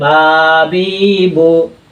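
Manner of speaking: wrongly drawn-out reading, each syllable stretched long.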